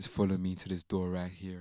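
seductive, come-hither, sultry put-on sexy voice. Retelling an asmr masseuse recording, imitating a sexy voice. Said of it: "giving sexy voice".

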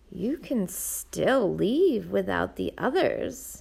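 sinister, tempting, slow evil half-whisper. Reading a novel, the voice inside Nina's head speaks to her: evil half-whisper. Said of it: "an evil voice whispered in her head".

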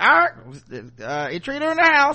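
put-on squawky parrot voice, very high, very loud. Comparing a film's parrot to the original cartoon, talking like a parrot. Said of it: "talking like a parrot".

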